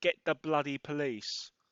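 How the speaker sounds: usual speaking voice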